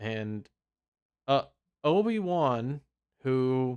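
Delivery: normal talking voice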